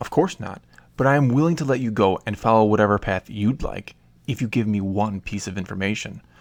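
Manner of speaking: usual speaking voice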